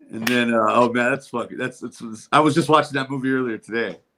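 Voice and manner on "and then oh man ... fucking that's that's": usual speaking voice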